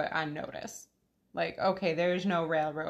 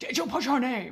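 exasperated, fed up, a little louder and higher; 6 semitones higher, 4 dB louder than usual. Recalling a film scene, imitating Gambon's Dumbledore, a little louder. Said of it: "waving an arm and talking a little louder, not shouting".

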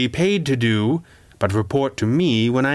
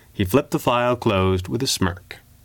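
ordinary delivery

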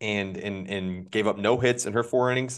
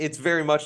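high voice cracking mid-phrase; 5 semitones higher than usual. Correcting where the broadcast said the game was, voice crack. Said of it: "I hope you like that voice crack".

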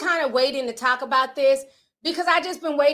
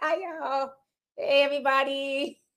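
put-on shy voice, quieter; 5 dB quieter than usual. Imitating a mom greeting the audience at a live show: imitating shy mom. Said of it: "my mom's real shy".

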